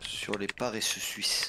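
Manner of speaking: extremely slow, drawn-out sloth voice.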